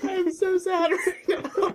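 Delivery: talking through laughter. Saying they feel sad while another speaker teases them, laughing while talking. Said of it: "Then why are you laughing so much?".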